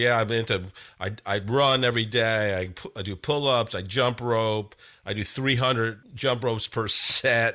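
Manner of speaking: plain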